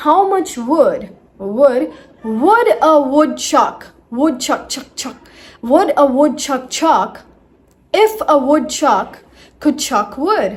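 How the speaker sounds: slow, deliberate, word by word, words repeated. Teaching the k and w sounds, repeating a phrase slowed down. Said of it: "let's slow it down".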